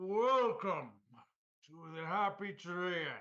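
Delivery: hearty, big-voiced, boisterous and loud. Narrating a game, a tree ent welcomes the party: boisterous announcement. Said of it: "he boisterously announced".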